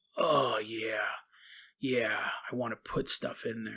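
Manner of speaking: hushed drawn-out moans. Retelling a man at each garbage can, the speaker imitates a man moaning. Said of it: "we can hear his moans".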